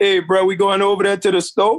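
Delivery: put-on New Orleans accent. Recalling how people in New York laughed at how they talked, in their old New Orleans accent. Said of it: "Because this how we talk down here".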